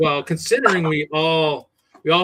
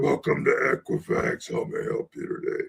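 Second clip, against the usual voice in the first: put-on demon voice, lower and quieter; 2 semitones lower, 6 dB quieter than usual. Recalling call-center coworkers joking about a phone greeting: demon voice answering the phone. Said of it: "I don't think they want to think they reached hell".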